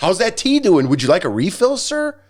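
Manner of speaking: put-on Southern accent. Retelling a waiter offering yet another iced-tea refill, in a Southern accent. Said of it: "except in a Southern accent".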